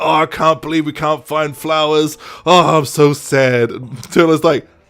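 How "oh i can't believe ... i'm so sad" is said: put-on drunk voice, slow tipsy drawl. Retelling a scene where a character has had too much to drink: imitating a drunk character. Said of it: "Jasper's had a bit too much to drink".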